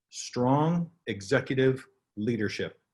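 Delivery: very slow, deliberate, word-by-word emphasis. Speaker naming the key success factor in cloud transition, very slow. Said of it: "I'll say it very slowly".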